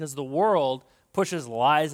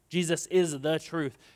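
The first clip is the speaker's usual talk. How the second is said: plain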